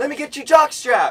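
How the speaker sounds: very loud, very high-pitched yell. Recounting shouting out to the Bucks players beside asking kids, retelling a yell. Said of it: "So I start yelling out".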